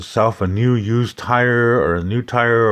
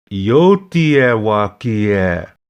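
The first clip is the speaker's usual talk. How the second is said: a little faster, with words run together. Teacher having a student repeat after them, saying it a little bit faster. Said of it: "let's say it a little bit faster".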